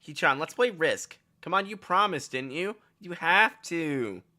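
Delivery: put-on high girlish register. Voicing a character who asks Hee-chan to play Risk: Misha voice. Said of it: "I think I'm starting to get her voice down".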